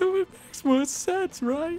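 very high, bad fake sobbing voice. Speaker pressing their own view, in a terrible fake crying voice. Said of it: "with a terrible fake crying voice".

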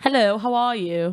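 quick, put-on British accent. Asked whether they can do a British accent, the speaker tries one: put-on British accent. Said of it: "Can you do a British accent?".

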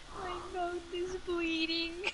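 hushed, soft, slow, mournful, drawn-out delivery. Retelling how a friend sounded after losing a tooth: imitating a sad voice. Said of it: "He did sound so sad. He's like".

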